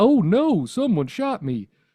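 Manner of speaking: loud, high cartoon voice with big swooping pitch. Imitating a game mercenary said to voice Barney: imitating the Barney voice. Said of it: "his voice is like".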